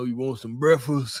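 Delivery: very deep, full, robust voice dropped way down. Reading a viewer's wish for a deeper voice, doing Melvin from Baby Boy voice. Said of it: "Freaking Melvin off of Baby Boy type ish".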